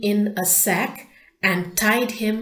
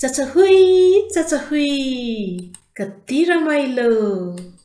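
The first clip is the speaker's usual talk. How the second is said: crying out with great joy, high and loud; 5 semitones higher, 6 dB louder than usual. Narrator reads the fox being pushed on a swing by the bear, crying out with great joy. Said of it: "the fox cried with great joy".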